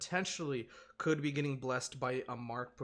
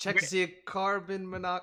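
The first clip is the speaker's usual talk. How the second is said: bad, failed French accent, loud and high; 6 semitones higher, 8 dB louder than usual. Imitating their house's carbon monoxide alarm, in a bad french accent. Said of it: "I can't do a French accent".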